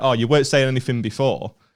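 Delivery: ordinary delivery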